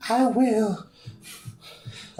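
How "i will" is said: high-pitched put-on girl voice. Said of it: "I don't want you to do the girl voices".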